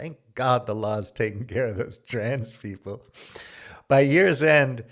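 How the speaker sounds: talking through laughter. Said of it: "I'm sorry I'm laughing".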